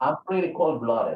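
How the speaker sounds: sure statement tune, falling, no rise on "cold-blooded". Teacher showing students the second sentence is not a question, with statement intonation. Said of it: "the second sentence is not a question".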